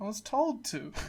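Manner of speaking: put-on soft, deflated, beaten-down, defeated voice. Reenacting Sting confronting Shelley; mock-defeated as Alex Shelley. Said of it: "The defeat in Alex's voice".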